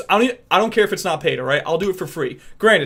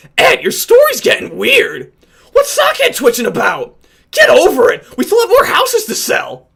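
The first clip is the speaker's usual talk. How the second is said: very high, loud, brash cartoon character voice; 8 dB louder than usual. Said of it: "So I can kind of do Eddie".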